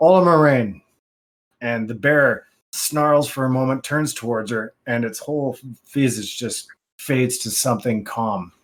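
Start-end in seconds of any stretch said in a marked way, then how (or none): 0.0-0.8 in-character yell, carrying as if across distance. Voicing a character who calls out as a bear snarls: yelling in character. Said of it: "you hear her yell".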